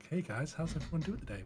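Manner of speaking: smooth, silky, jazzy put-on voice. Describing how the podcast hosts usually talk, in a smooth jazz voice. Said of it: "talk in as like a smooth sort of jazz sort of voice".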